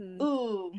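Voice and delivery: patronizing, condescending, talking-down ooh. Acting out someone's reaction to a choice, a mock-condescending ooh. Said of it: "not a curious way, in, like, a definitely condescending way, like".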